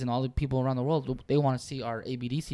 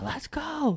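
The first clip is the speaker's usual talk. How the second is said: screaming voice, pitched higher; 13 semitones higher than usual. Retelling a player being screamed at while down in the Super Bowl: imitating someone screaming. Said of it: "And he's screaming".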